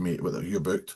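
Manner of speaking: usual speaking voice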